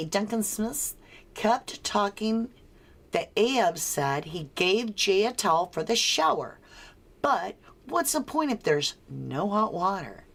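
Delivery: plain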